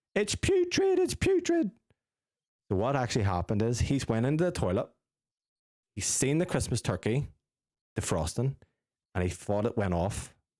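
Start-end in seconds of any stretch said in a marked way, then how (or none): 0.2-1.7 mock, very high, shrill, freaked-out, drawn-out shriek. Retelling a story about someone rubbing snow on a turkey: imitating someone screaming. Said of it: "he's just screaming".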